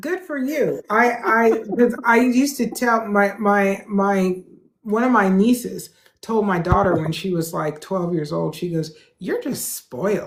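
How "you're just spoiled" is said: mock falsely nice, sweetly cutting with nasty edge. Retelling a niece telling the speaker's daughter she's spoiled, in a nasty-nice tone. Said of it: "she said it with that you know nasty nasty nice tone".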